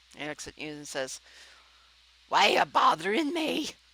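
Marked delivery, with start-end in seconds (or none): 2.3-3.7 grumpy dwarf voice, much higher, louder, slower. Narrating a scene, voicing a dwarf who turns to greet you: grumpy dwarf voice. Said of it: "this would be Grumpy".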